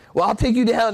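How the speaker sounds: loud, high, shouted yell. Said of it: "he's yelling back at him".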